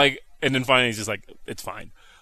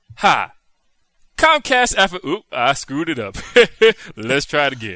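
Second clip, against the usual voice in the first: fumbling, botched words, then laughing it off; 4 dB louder than usual. Retelling a botched commercial recording, playing the reader: Alfred Williams impression. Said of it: "I like the Tony Atlas laugh".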